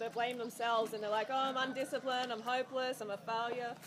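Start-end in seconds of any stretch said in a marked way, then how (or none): none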